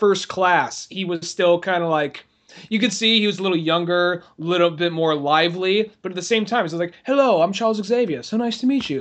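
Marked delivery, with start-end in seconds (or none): 7.0-9.0 very proper, prim delivery with raised pitch. Retelling how Charles Xavier greets people: very proper Charles Xavier voice. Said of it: "Very proper".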